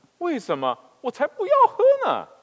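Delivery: shrill, very loud, incredulous, swooping pitch. A girl answers her mother's offer of olive oil, incredulous. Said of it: "女孩有点难以置信地回答说".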